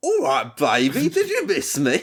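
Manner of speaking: swooping attempted English accent. Retelling how an actor delivered his movie line, in an attempted English accent. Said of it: "I'm going to do an English accent".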